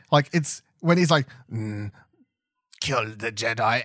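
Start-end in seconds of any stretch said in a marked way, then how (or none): 1.5-3.8 very slow, switched-up tone, every word drawn out. Imitating Palpatine in the movie as he orders the killing: Palpatine impression. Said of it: "he kinda switches up his tone".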